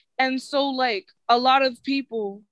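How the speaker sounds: plain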